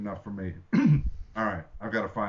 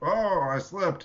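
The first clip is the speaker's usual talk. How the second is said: very high-pitched pretend stumbling exclamation; 10 semitones higher than usual. Playing a character caught on a well, pretending to slip. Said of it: "I'm gonna pretend".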